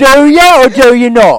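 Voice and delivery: very loud, very high, fake Cockney accent. Answering a teasing question in a joke persona: put-on Cockney accent. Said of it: "when you make that accent".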